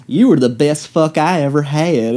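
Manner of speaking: heavy, deep put-on Southern Tennessee accent. Imitating a character who sounds like she's from Tennessee: deep Southern accent. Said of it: "that deep Southern accent that she has".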